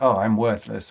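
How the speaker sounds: ordinary talk, nothing marked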